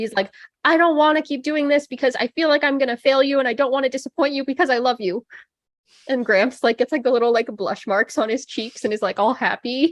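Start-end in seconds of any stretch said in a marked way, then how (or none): 0.6-5.3 shrill, pleading scream. Describing an anime flashback, voicing Zenitsu screaming down to Gramps: imitating Zenitsu screaming. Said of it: "he's like screaming down to Gramps".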